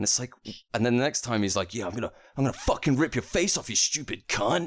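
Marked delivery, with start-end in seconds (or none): 1.7-4.7 wild, deranged, unhinged, pitched-up voice. Describing a character with inconsistent lines, the speaker does a mock-unhinged threat. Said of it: "unbelievably unhinged".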